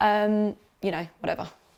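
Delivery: ordinary talk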